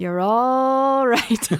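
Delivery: put-on loud, easygoing Irish accent, drawn-out "all". Telling a joke contrasting a canadian and an irish person, imitating an irish guy. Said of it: "And then the Irish guy goes".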